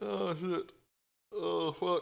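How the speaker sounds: drawn-out strained groan. Stretching before stepping away from the stream, groaning while stretching. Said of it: "I'm stretching".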